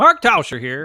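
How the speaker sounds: loud, high-voiced, belted-out delivery. Trying an impression after noting he has a really high voice: Mark Tauscher impression. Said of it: "I can't do a Mark Tauscher".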